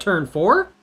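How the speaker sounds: "four" lifted in a questioning rise.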